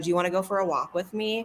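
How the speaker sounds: normal talking voice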